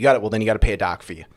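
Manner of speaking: mock yelling, put-on. Telling a story, the speaker acts out a dock owner yelling at renters, retelling a yell. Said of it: "him yelling at them saying".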